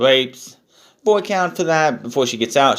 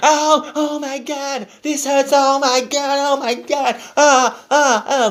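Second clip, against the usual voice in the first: high wailing cries of pain; 13 semitones higher than usual. Retelling a wrestler missing a leg drop: mock crying in pain. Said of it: "crying like a bitch".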